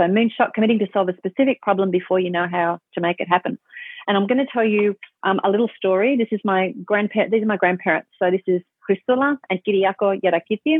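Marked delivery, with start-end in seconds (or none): 8.8-10.8 names given native Greek pronunciation. Introducing the grandparents by name, Greek accent. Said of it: "I can say that with a Greek accent".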